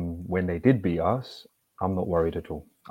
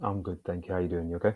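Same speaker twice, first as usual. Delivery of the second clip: soft-spoken, very quiet voice; 8 dB quieter than usual. Answering a greeting at the start of a chat: speaking very quietly. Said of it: "You're so quiet".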